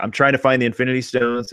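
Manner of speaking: ordinary delivery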